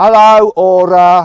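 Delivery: very loud, high, thick Midlands accent. Testing a car's voice assistant with a strong Midlands accent. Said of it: "I'm going to do a really strong Midlands accent".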